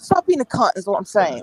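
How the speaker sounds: plainly delivered put-on Cockney accent. Quoting Billy Butcher's reply to Huey: Billy Butcher Cockney voice. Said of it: "He's got a Cockney accent. So he'll be like".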